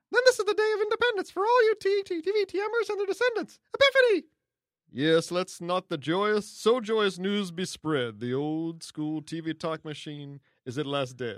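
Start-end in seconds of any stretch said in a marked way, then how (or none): 0.1-4.2 squeaky, swooping sing-song voice, bouncing up and down. Asked to do a Munchkin voice, the speaker reads out a letter in a Munchkin voice. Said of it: "I couldn't do any more Munchkin voice".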